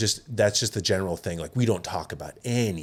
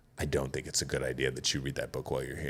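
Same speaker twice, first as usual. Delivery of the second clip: icy, very cold, unwelcoming, discouraging tone; 7 semitones lower, 9 dB quieter than usual. Retelling a warning not to read a book there: imitating a cold delivery. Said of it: "very coldly looks at me and he's like".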